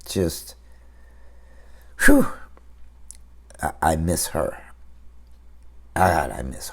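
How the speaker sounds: trying not to get emotional. Talking about missing their mom, the speaker is holding back emotion. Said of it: "I'm trying not to get emotional".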